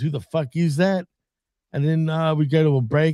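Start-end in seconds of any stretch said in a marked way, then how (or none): none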